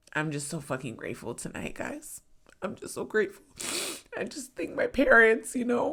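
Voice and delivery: tearful, choked up, swooping voice that cracks. A performer thanks the crowd, crying, voice breaking. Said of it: "Sorry I'm crying like this".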